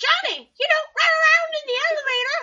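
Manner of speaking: piercing, shrill, very loud screaming. Recalling what they screamed while playing a game: retelling a scream. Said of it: "And so I started screaming".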